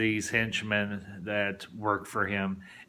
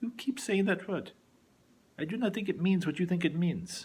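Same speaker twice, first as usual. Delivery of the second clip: put-on passable Spanish accent with raised pitch; 9 semitones higher than usual. Quoting a film character's line about a repeated word, Inigo Montoya Spanish accent. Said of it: "Sorry if my if my Spanish accent's not the best".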